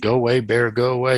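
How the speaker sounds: put-on loud yelling. Retelling how a man on a kayak yelled at a creature: imitating someone yelling. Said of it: "he's yelling at this thing like".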